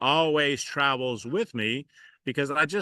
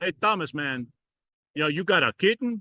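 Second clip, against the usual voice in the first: put-on Louisiana Cajun accent; 3 semitones higher than usual. Quoting the cajun dirt-work guy greeting you on a saturday morning, in a cajun accent. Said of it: "This is my Cajun accent".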